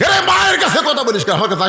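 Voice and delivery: angry high-pitched holler.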